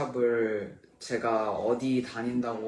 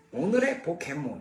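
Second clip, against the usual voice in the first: put-on cartoon professor voice, announcing style; 4 semitones higher than usual. Asked about the Pokémon professor's voice, trying it in Pokémon professor voice. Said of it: "포켓몬스터 박사님 목소리요? ... 이런 목소리였나?".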